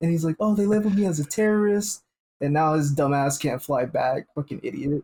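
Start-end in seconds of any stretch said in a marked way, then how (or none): 0.4-2.0 acted, high-pitched voice on the verge of tears. Retelling an airport clip of a rioter on a no-fly list: imitating someone near tears. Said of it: "on the verge of tears".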